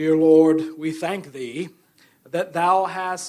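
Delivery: loud, otherworldly, affected prayer-like delivery. Mocking how people pray aloud: imitating an affected prayer voice. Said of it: "they just affect this prayer voice".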